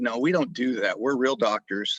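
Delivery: ordinary delivery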